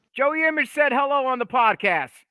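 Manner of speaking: very high, loud yell projected across a room. Calling out to someone in another room: yelling across the room. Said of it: "I'm gonna yell it out to him now".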